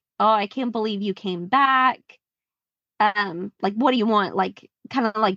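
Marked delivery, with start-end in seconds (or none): 0.2-4.4 annoyed, irritated tone of voice. Retelling how a woman answered a fan who came back: imitating someone annoyed. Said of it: "annoyed with him and is like".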